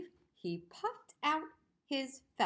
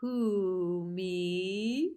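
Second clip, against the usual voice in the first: dragon voice with "me" stretched long; 4 dB louder than usual. Reading a story where a dragon answers Owl, deep voice. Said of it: "Said a deep voice".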